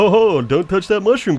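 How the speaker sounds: put-on high, loud, jolly children's TV host voice.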